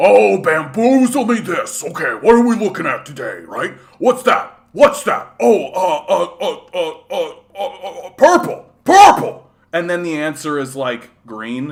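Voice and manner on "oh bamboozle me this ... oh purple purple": very loud, high, stammering, dopey goofball voice. Describing a guy who tries hard and is always wrong, imitating how the guy talks. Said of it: "the guy talks like this".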